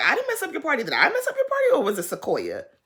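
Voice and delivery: acted giggling, laughing, high sing-song delivery. Retelling what she said back about the party: imitating someone laughing while talking. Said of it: "she was laughing".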